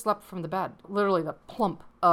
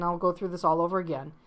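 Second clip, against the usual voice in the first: normal talking voice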